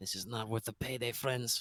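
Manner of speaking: muttered under breath. Voicing a hooded figure leaving, muttered under breath. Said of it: "under his breath says".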